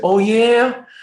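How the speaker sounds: put-on Philly accent pitched very high. Retelling an old story, voicing a character's reply in a philly accent. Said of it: "or Philly accent".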